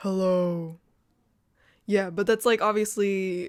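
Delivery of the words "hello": very low voice, dropped to the bottom of the range. Showing how low the voice can go: going really low. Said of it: "But I can also go really low, like this".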